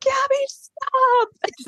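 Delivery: acted, shrill, very high-pitched hysterical snapping outburst. Retelling how Alexis snapped at Gabby, imitating Alexis snapping hysterically. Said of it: "starts getting just i have to say hysterical".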